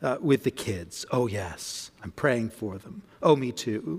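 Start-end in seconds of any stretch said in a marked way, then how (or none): 1.1-4.0 mock hushed gossipy whisper, lower and quieter. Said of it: "in a whisper, rather gently, rather carefully".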